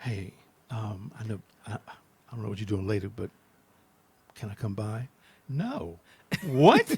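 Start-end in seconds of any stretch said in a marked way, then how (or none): 0.0-5.1 fake sexy, seductive voice, much quieter. Talking about rejection, the speaker demos asking someone to come by in a mock sexy voice. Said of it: "that was my nice, sexy voice".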